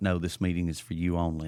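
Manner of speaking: ordinary talk, nothing marked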